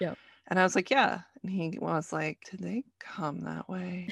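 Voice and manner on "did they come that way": put-on hushed, soft, strongly disapproving tone. Parent retells their youngest asking about their ripped jeans, imitating a disapproving voice. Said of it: "in this really disapproving voice".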